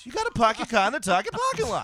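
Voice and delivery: loud, high, swooping yelled voice. Acting out a movie scene as the police chief: Mark Wahlberg as police chief. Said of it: "Mark Wahlberg as the chief of police".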